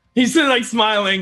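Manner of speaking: ordinary talk, nothing marked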